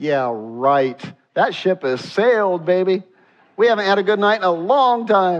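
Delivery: mock plainspoken, blunt, no-frills, unpolished tone. Acting out what Sarah says in her heart: imitating Sarah speaking bluntly. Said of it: "she's speaking really blunt".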